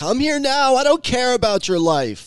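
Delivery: very high, wheedling, whiny voice. Voicing the boss while reading out a message exchange, in a whiny voice. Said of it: "like a whiny sort of like".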